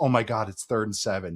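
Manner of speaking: mock doom-laden fear, horror-movie dread. Quoting a group-chat friend reacting to third and seven, in mock horror-movie dread. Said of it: "Like he was saying it like it was like a horror movie".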